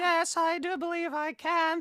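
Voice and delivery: put-on very high old-lady falsetto voice. Asked to try talking in a grandma voice, answering in a grandma voice. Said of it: "Can you talk in kind of a grandma voice like that?".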